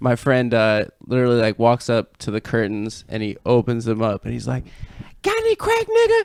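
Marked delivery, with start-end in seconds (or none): 5.2-6.2 sudden, very high-pitched shout. Retelling what a friend shouted after opening the curtains: imitating someone shouting. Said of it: "he just shouts it at Tommy".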